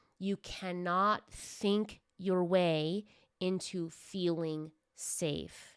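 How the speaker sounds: slow, deliberate, each word drawn out. Announcing to listeners that this point comes slowly, said slowly. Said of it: "I'm going to say this slowly".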